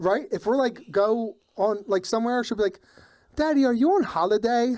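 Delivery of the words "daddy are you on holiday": put-on little girl speaking with an Australian accent. Retelling what a daughter asks on outings, imitating an australian accent. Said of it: "developed some words with that Australian accent".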